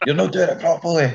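put-on loud, scary shouting, Irish accent. Retelling a man shouting at him when he was seventeen, big scary Irish voice. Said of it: "big scary Irish voice".

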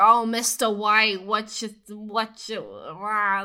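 loud, very slow, weird, drawn-out rambling complaining rant. Describing a scene where a high character rants aloud to himself, imitating someone complaining. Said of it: "Like he's just like complaining".

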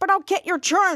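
plain

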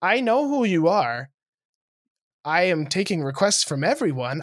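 mock deliberately sweet, nice, polite, courteous tone. Retelling answering the bride's mom who wanted 80s music, retelling own put-on nice voice. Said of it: "I told her like nicely with my nice voice".

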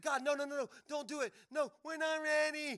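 desperate pleading. Retelling a scripture story, a figure begging god, retelling a desperate plea. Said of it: "But then Moses pleaded".

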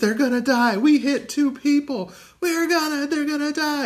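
mock screaming in a very high, intense voice. Retelling a movie scene where a girl screams after a boat crash: imitating a girl screaming.

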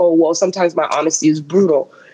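ordinary talk

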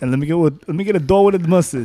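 imitated New York accent. Back from a trip to New York, the speaker jokes, imitating a New York accent. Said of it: "That's what they all sound like".

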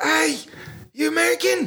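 put-on very high-pitched New Zealand accent. Retelling meeting New Zealanders at a bar, quoting them in a New Zealand accent. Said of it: "That was a very good accent for when you said you guys American".

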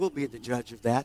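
tiny, small, soft little voice. Retelling a remark heard in church after announcing a short message: imitating a little voice. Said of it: "I heard a little voice say".

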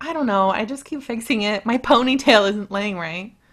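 ordinary delivery

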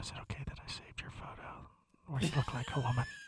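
unvoiced teasing whisper.

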